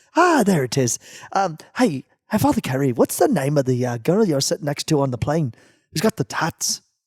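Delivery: exaggerated put-on Irish accent, cartoonish leprechaun style. Retelling what a man asked him on the plane, in a Lucky Charms Irish accent. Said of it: "Let me see if I can get my Lucky Charms accent".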